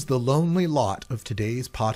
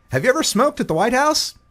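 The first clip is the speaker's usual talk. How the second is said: very high-pitched voice; 12 semitones higher, 4 dB louder than usual. Reading an interview transcript aloud, impersonating Jimmy Kimmel. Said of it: "I'll do my best to impersonate the two".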